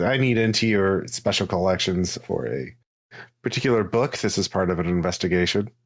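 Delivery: plain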